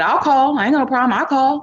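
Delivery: high, eager tone.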